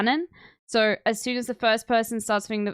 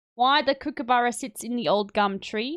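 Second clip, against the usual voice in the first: faked Australian accent. After criticizing his Australian accent, the speaker tries an Australian accent. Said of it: "I'm not saying mine is better".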